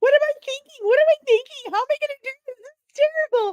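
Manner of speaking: mock panicked sobbing, very high and very loud. Retelling pacing in panic before an interview: imitating own past crying. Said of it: "I was pacing in the living room crying like".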